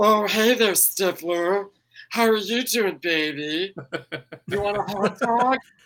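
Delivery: ditzy, dumb bimbo voice. Contrasting a film role with an actress's usual style: Jennifer Coolidge voice. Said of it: "the classic Jennifer Coolidge voice".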